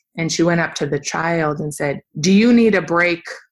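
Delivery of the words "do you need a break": harsh, loud, angry, confrontational tone. Retelling what she said to a child in front of everyone, mock-angry confrontational tone. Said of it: "In this kind of very angry tone, confrontational tone, very loud".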